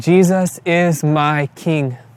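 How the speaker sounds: play-acted, very slow, drawn-out and strong delivery. Speaker retelling words a man cried out to the family, retelling a loud, strong cry. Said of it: "in a loud, strong voice".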